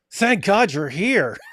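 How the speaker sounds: mock snide, sarcastic, high-pitched voice. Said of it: "like sarcastically".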